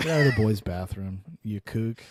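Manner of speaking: low, dismissive "ugh" brush-off. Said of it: "in a really dismissive".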